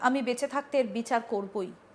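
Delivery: normal talking voice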